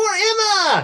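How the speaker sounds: very high, eerily bright, alarmingly cheery chirp. A narrator voices a half dozen bunnies holding grenades; alarmingly cheery voice. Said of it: "in an alarmingly cheery voice go".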